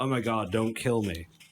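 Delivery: ordinary talk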